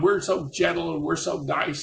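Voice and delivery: creaky, rough, half-shouted insistent voice. Retelling how the vietnamese ladies yelled back: imitating someone yelling. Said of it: "they started yelling at me about".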